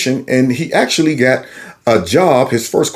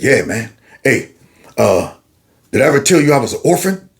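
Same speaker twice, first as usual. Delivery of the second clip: imitated deep male voice. Retelling a phone call from D, doing D's deep voice. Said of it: "talks like this".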